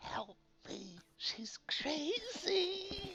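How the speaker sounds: silent mouthed words, very slow. Silently mouthing to two companions while held: mouthed plea for help. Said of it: "mouthing to the other two".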